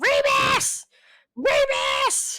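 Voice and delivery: loud scream.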